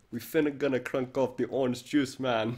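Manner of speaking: loud Jamaican-sounding accent. Speaker repeats a viewer comment aloud in a Jamaican accent. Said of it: "It sounds Jamaican".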